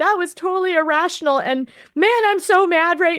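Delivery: mock small-child sobbing, high, tearful speech. Retelling her words from upstairs after a fight: imitating someone sobbing. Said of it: "sobbing like a small child".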